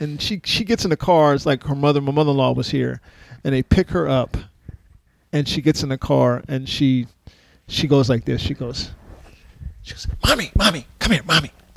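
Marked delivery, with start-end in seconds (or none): 10.3-11.5 put-on hushed whisper, higher. Retelling how a daughter in the car called her mother: imitating a hushed whisper. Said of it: "like she thinks like nobody can hear her".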